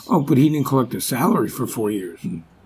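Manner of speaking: sarcasm laid on very thick, dripping. Discussing a president's business dealings, very sarcastic. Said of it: "I'm being very sarcastic while I'm saying that".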